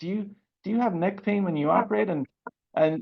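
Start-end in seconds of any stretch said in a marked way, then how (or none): 0.0-2.1 whispering, higher pitch. Retelling a question to another past president: imitating own whisper.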